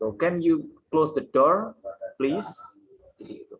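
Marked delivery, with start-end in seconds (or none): 0.1-2.5 main sentence stress placed on door. English lesson on stress before the comma: main stress on door. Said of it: "there must be stress before the comma".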